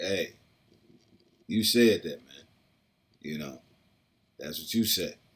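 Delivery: play-acted cool, unbothered, smooth, easy-going tone. Retelling the answer given to Judas: imitating a smooth reply. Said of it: "he said it so smooth".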